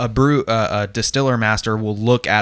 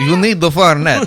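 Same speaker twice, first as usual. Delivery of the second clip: fake Italian accent, higher and louder; 6 semitones higher, 5 dB louder than usual. Imitating the bartender offering a drink: put-on Italian accent. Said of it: "That was Italian".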